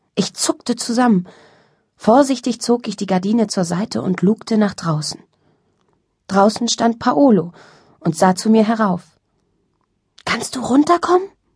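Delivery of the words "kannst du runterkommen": whispering, much higher pitch. Narrator reads Paolo, standing outside her window, whispering up to her. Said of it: "flüsterte er".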